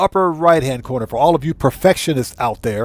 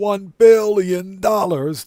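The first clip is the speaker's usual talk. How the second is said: pitched-up movie villain voice; 6 semitones higher than usual. Telling a guest about hitting the mark two weeks ago, Dr. Evil voice. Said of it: "In my Doctor Evil voice".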